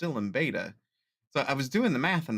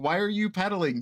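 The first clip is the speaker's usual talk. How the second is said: mock screaming outburst, high pitched; 7 semitones higher than usual. Retelling watching a race replay, imitating own screaming at the TV. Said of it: "screaming at the T V".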